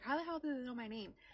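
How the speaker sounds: acted-out, panicked, freaked-out voice. Retelling hearing strangers say their name: retelling own freaking out. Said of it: "freaking out".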